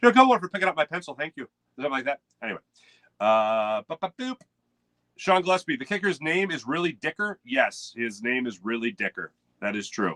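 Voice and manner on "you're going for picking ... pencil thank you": bad put-on Irish accent, fast and high. Speaker asks whether the Irish give big compliments, demonstrating in an Irish accent. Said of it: "Pardon my accent".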